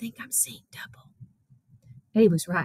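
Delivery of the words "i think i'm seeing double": very quiet, hushed whisper under the breath. Narrating a character who pokes a companion in the ribs, whispered.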